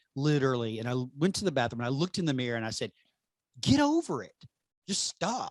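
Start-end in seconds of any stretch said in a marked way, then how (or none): 3.6-5.5 acted very high, slow, swooping, stern yell. Recalling facing the bathroom mirror during crazy thoughts, retelling yelling at herself. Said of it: "Like I'm yelling at myself".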